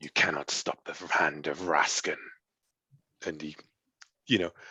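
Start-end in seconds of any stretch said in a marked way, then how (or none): 0.0-2.2 contemptuous, sneering villain voice. Retelling a story scene where a villain speaks: mock sneering villain. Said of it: "he sneers and says".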